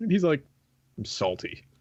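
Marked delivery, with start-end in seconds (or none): 1.0-1.6 breathy, whispered put-on character voice. Retelling a friend's reply on a podcast, imitating McFizzle. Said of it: "That's an interesting McFizzle impression there".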